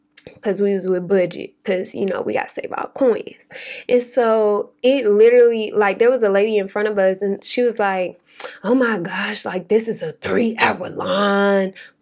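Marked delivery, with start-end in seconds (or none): 8.6-11.7 put-on emotional, upset woman's voice. Retelling a lady in a long rental car line, imitating an emotional woman. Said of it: "She's getting all emotional".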